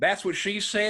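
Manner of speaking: put-on poor North Carolina accent. Retelling how his stepdad quotes The Office, in a really bad North Carolina accent. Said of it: "really bad North Carolina accent".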